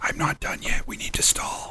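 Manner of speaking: quick, hurried, hushed whisper. Voicing Redbridge who turns to the player to stall: quick whisper. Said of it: "quickly whispers".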